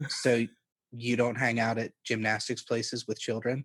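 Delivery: very flat, low monotone, no expression at all. Retelling own uncomfortable question to someone: imitating own super monotone. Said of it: "I get, like, super monotone".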